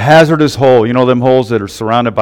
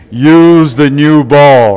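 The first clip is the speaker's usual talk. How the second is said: loud, very slow, booming, lofty delivery; 3 semitones higher, 5 dB louder than usual. Telling a golf joke, the speaker does the voice from above in a God voice. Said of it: "That's my God voice".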